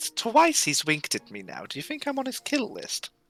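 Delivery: conspiratorial whispered aside. In character, whispering an aside to a fellow character about a winking guard. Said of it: "I whispered it to L'Oreal".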